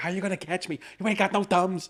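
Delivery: taunting tiny monkey voice. Retelling a funny movie scene, imitating a tiny movie monkey. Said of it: "He's like".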